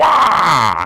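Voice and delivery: loud, high-pitched cartoon shout. Showing a Wario as Richard Nixon impression. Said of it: "my Wario as Richard Nixon impression".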